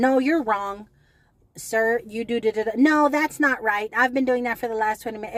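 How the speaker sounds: loud, exasperated, snapping correcting tone.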